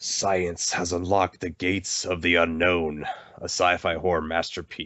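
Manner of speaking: very dark, grim, somber tone. Reading a horror game's box text aloud to viewers: very dark tone. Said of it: "I'm also going to speak in a very dark tone".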